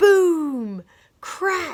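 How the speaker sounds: loud, big voice with drawn-out boom. Speaker reading a story aloud shows how big printed words are said: loud, big voice. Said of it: "we are supposed to say this in a loud, big voice".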